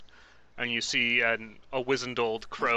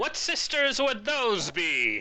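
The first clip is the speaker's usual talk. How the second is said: put-on very high, swooping old crone voice; 11 semitones higher, 4 dB louder than usual. Player speaking as a character during a role-play game, crone voice. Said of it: "a crone".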